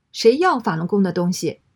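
ordinary delivery

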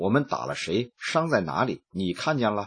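usual speaking voice

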